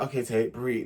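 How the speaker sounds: put-on patronizing voice. Retelling how someone told Tate to breathe: imitating Emily's patronizing tone. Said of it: "it was quite patronizing".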